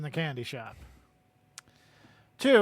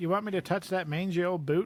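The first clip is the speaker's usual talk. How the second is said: plain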